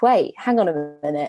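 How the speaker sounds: usual speaking voice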